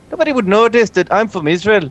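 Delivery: phony, fake put-on Irish accent. Talking with others, keeping up a fake irish accent. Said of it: "continue faking an Irish accent".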